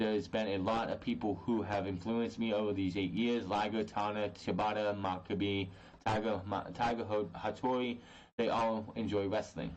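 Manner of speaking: plain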